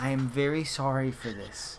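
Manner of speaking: soft, hushed, close half-whisper. Voicing a character who speaks to another before casting a spell, half-whispering. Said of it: "he whispers to Kasim".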